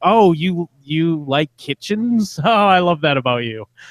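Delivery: high-pitched, condescending, talking-down tone. Describing how a woman talks, the speaker imitates her mock-condescending way. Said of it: "like condescending way".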